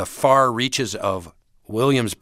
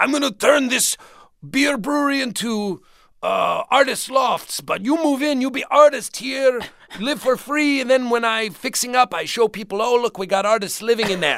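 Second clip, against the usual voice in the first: put-on heavy Dutch accent, very high-pitched. Recalling a landlord's pitch, speaker quotes him in a thick Dutch accent. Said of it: "he had this thick Dutch accent".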